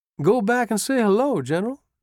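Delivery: very high-pitched, coaxing, teasing voice. Sergeant Corse speaks to General Buford as he looks back at a woman: coaxing, grinning tone. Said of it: "A coaxing voice, a grinning tone".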